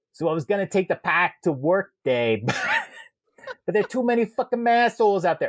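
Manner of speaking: clumsy put-on Boston accent, pitched high. Reading out a listener's written message in a boston accent. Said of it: "it's hard to do a Boston accent".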